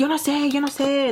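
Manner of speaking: acted exasperated, put-upon whining. Retelling what he overheard a man saying in another room, imitating him sounding annoyed. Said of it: "like all annoyed with her".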